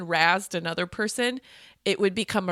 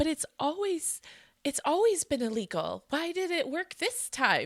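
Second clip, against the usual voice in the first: high-pitched, soft, naive tone. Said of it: "You read it in, like, a naivety way".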